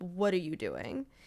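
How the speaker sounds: furious, angry scolding delivery. Retelling how his mother called him: imitating a furious mother.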